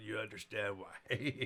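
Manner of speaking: plain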